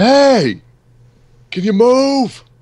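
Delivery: very high, very slow, drawn-out holler. Playing a character who leans out a car window, yelling. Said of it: "sticks his head out the window and yells".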